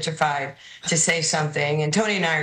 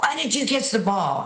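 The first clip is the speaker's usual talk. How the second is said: put-on yell, much higher pitch; 6 semitones higher than usual. Telling a story about a teammate at point game, retelling a teammate's yell. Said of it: "he starts yelling".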